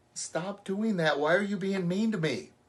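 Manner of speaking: helpless victim voice. Speaker shows how not to ask someone to stop being mean, victim-sounding voice. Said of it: "that's a victim".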